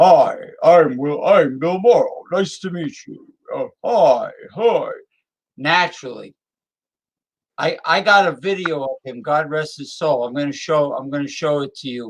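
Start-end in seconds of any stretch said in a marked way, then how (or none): 0.0-3.3 deep, rich, full-bodied voice. Speaker imitates a man introducing himself; Bill Morrow's deep, rich voice. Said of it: "that naturally deep, rich".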